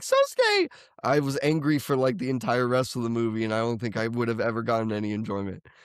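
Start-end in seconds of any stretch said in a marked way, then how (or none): 0.0-0.7 put-on cartoon girl voice, very high-pitched, piping. Retelling how the character calls out in the movie: imitating Ponyo's voice. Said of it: "her voice is like".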